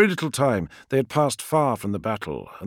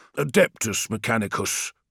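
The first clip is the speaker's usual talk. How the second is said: ordinary delivery, nothing marked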